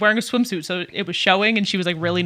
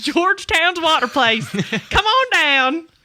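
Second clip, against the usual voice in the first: drawled Southern US accent, slow and high; 7 semitones higher than usual. Joking about a renamed water park in a southern accent. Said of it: "You slipped into the accent again".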